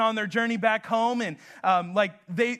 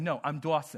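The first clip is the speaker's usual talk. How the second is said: put-on lisp, spoken slower; 7 semitones lower, 6 dB quieter than usual. Retelling how Dawson corrects the speaker, imitating Dawson with a lisp. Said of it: "when i do my dawson i have a lisp".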